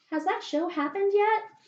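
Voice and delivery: very high, small, tiny little voice. At a coffee shop counter, retelling a woman asking about the show, tiny little voice. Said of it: "I just hear this like tiny little voice".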